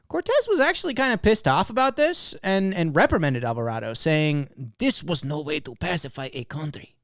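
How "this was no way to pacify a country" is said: put-on Spanish accent, straight from Spain. Reading a quote from Cortez about a captain's raid: put-on Spanish accent. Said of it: "you sounded like you were straight from".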